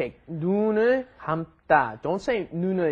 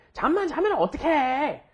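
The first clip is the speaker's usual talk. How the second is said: high-pitched, reproachful scolding tone; 8 semitones higher than usual. Korean lesson example of reprimanding somebody: scolding tone. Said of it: "you can hear by the intonation, it's a reprimand".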